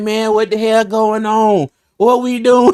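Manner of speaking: rattled, not-so-tough voice. Retelling how Doug sounds on the phone, not playing tough: imitating Doug. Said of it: "Doug be like".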